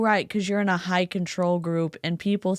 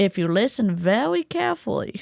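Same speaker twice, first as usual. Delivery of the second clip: put-on silly animated cartoon voice. Talking about Randy, the speaker slips into an Elmer Fudd voice. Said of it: "I'm saying this in the Elmer Fudd voice".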